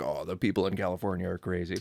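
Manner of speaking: ordinary talk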